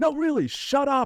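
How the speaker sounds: group shouting, heckling.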